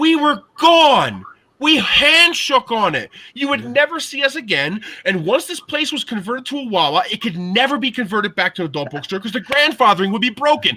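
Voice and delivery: put-on furious outburst. Recounting what the speaker said in a deal dispute over the shop, retelling a furious yell. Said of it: "I lost my shit right there".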